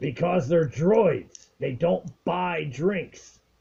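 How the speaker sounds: rough-edged, gruff, high-pitched alien voice. Game master voicing the bartender refusing a droid entry: gruff alien voice. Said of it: "very gruff alien voice".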